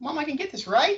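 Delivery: upward, rising pitch on "right". Like a child asking a parent for something, upward inflection on right. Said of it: "an upward inflection".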